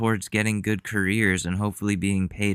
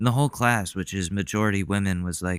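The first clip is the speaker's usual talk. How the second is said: usual speaking voice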